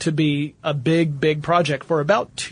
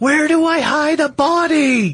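put-on loud, very high, very drawn-out screaming; 11 semitones higher, 5 dB louder than usual. Joking about shouting at a smartwatch on the street: mock screaming at a watch. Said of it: "I'm screaming at my wrist".

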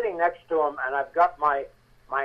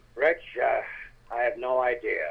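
put-on low-key voice, lower pitch; 4 semitones lower, 4 dB quieter than usual. Retelling what an actor said on a film set: low-key David Janssen voice. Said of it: "he talked like this. He very, very low-keyed".

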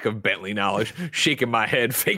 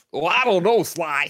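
put-on cartoonish character voice, high-pitched; 6 semitones higher than usual. On a PlayStation podcast, showing the others his Bentley voice. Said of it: "I can do a pretty good Bentley".

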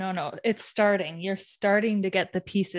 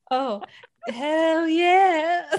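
high, drawn-out, very loud teasing voice; 10 semitones higher, 5 dB louder than usual. Repeating the other speaker's exclamation back: mocking imitation of hell yeah. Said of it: "are you mocking me right now?".

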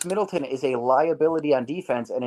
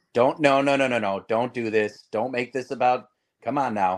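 mock disappointed father voice. Retelling a broadcaster's reaction when a player ran into the tunnel: imitating Marcus Johnson as disappointed dad. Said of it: "he sounded like a really disappointed dad".

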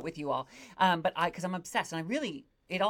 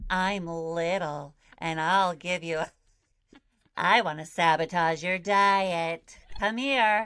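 creepy little elf voice, louder; 4 dB louder than usual. Playing the cookie-offering elf from the co-host's joke: creepy elf voice. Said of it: "Why is your elf so creepy?".

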